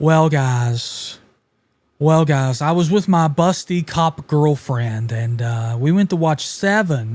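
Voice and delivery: very seductive, slow put-on voice. Retelling what JK said at the members only stream: imitating JK's seductive voice. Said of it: "that very seductive voice".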